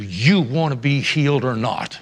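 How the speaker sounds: mock deep, very low and stern voice. Retelling a scripture passage, voicing Jesus in a put-on stern voice. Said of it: "Jesus said in a stern voice".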